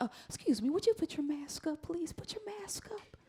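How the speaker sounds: hushed, soft, sweet, sugary, breathy voice. Speaker imitates airline staff telling a passenger to mask up, mock soft sweet voice. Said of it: "they had this little soft ass voice. It's all sweet".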